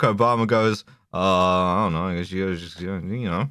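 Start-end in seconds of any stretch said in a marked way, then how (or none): 1.1-3.5 put-on low, bored, mumbling voice. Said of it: "This is an incredible Obama impression".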